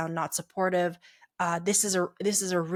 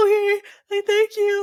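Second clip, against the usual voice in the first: mock ugly crying, very high and loud; 14 semitones higher, 9 dB louder than usual. Retelling thanking a partner who apologized: imitating own ugly crying. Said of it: "crying, guys, like, ugly crying".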